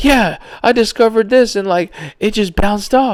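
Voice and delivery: thrilled, eager telling. Retelling a man's discovery on a documentary: imitating an excited man. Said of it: "This man was so excited".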